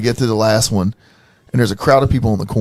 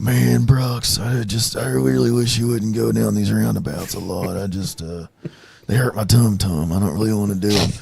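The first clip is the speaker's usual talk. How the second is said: put-on Texan drawl, quieter; 4 dB quieter than usual. Imitating a friend complaining about roundabouts: George Bush voice. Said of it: "he sounds like George Bush when he talks".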